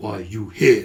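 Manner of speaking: loud, broken, very rough Common speech. Voicing the chieftain questioning the party, speaking very rough Common. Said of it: "says in a very rough common".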